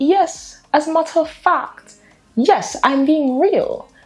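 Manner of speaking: very high pitch, slow delivery. Retelling a scene where Penelope asks Colin to kiss her: imitating Penelope. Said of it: "she was like".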